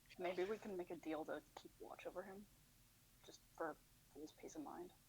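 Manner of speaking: quiet whisper. In a tabletop role-play, leaning over to Evan to propose a deal, whispering. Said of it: "I'm gonna say this at normal volume".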